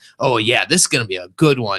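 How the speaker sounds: bubbling, giddy, swooping delight and excitement. Recalling a tree-climbing video with Rob, quoting him: imitating Rob's giddy excitement. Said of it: "I can just hear the giddiness in his voice".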